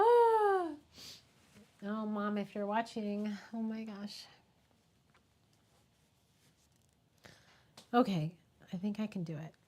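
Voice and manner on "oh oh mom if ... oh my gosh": choking up, voice catching, swooping unsteady pitch. Talking about losing both parents, the speaker addresses Mom, choking up with grief. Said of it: "I did not expect to be emotional right now".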